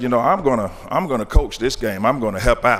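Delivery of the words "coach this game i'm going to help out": ordinary talk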